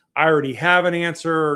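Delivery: top-of-the-lungs shout. Retelling shouting at the intake worker at a treatment center: imitating own past shouting. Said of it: "I was shouting things like".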